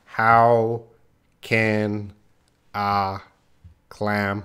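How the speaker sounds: slow, choppy, halting, each word separated. Showing the wrong way to say a tongue twister, slow, word by word. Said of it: "It's supposed to be fast".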